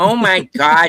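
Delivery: exaggerated Upper Midwest accent. Imitating a movie character who overdoes the accent: over-the-top Fargo accent. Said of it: "Everybody's doing that Fargo accent".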